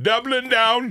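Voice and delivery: muddled, inconsistent fake British accent. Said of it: "I don't even know what accent I'm going for".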